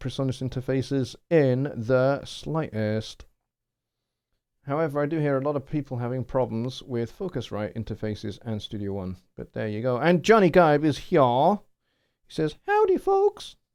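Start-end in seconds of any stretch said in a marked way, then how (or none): 12.7-13.5 really high, piping, squeaky voice. Reading a viewer's chat greeting aloud: really high voice imitating Johnny. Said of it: "I gave you a really high voice there".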